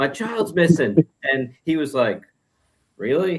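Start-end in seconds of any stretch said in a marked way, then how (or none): 0.0-1.0 frantic, high-pitched, panicked voice. Retelling a tv scene at a police station, the speaker voices the mother, imitating her panic. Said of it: "So she's all panicking".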